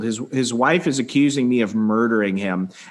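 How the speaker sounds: ordinary talk, nothing marked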